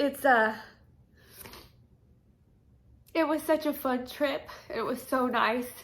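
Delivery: speaking through tears. Remembering a trip, crying while talking. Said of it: "I'm sorry, I'm crying".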